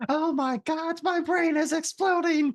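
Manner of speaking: loud, very high, drawn-out, stretched-out yell. Imitating Arrow yelling that their brain is exploding: imitating Arrow yelling. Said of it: "You sound just like Arrow".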